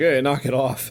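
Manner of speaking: ordinary delivery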